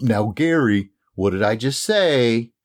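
very slow, patronizing, condescending, lecturing tone. Showing the audience how not to ask someone to repeat goals back, condescending tone. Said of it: "Don't be condescending".

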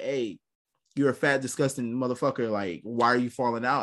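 ordinary talk

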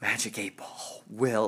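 concentrating voice. Speaker consulting a Magic 8-Ball about the Yankees game, concentration voice. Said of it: "That's my concentration voice".

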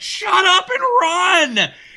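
mock, very high, very slow, drawn-out shouting. Retelling a game moment, telling a teammate to hurry: retelling a yell.

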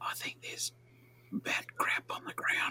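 very quiet, hushed whisper, barely voiced. Sneaking with the party, not breaking stealth: whispering. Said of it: "can I whisper without breaking stealth?".

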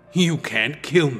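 with a snarl. The demon, Link's shadow, keeps talking to Link, snarling. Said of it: "the demon continued with a snarl".

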